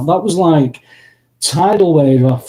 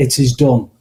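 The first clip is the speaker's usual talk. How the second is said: hushed, soft, close-up half-whisper; 3 semitones lower than usual. Describing a voice heard while lying in bed: imitating a half-whisper. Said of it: "whispered in your ear".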